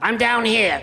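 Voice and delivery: ventriloquist voice for a duck. Playing a duck stuffed inside a turkey, calling out: voice of a duck inside a turkey. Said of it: "coming a little lower".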